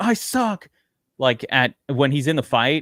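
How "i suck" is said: mock high-pitched scream, frustrated and self-berating. Retelling how a driver screamed about himself in a fight: imitating someone screaming. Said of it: "when he started screaming".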